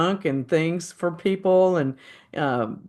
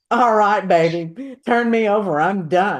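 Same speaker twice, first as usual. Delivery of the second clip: put-on campy comedian voice, louder; 3 semitones higher, 4 dB louder than usual. Imagining how a comedian would play the roasted saint: Paul Lynde voice. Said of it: "Paul Lynde playing him, going".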